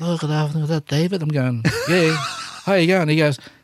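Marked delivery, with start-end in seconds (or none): 0.0-1.2 put-on lisping accent, higher and faster. Acting out Marlon phoning David, in a Godfather accent with a little lisp. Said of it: "He's got this sort of like Godfather accent, but he's got this little lisp".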